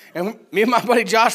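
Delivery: ordinary delivery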